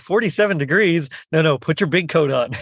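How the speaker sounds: ordinary talk, nothing marked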